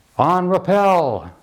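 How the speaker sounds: high, slow, drawn-out yell.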